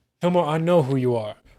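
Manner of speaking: plain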